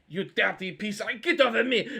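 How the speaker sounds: angry yelling. Voicing an angry character shoved off in a fight: angry NPC shouting. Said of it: "this guy's angry".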